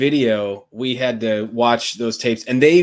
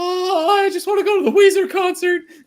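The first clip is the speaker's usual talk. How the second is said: very high-pitched male voice, pleading. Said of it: "He's like".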